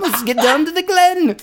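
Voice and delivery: very high-pitched put-on Irish accent. Acting out a film quote for fun: put-on accent. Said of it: "You can do it in an accent".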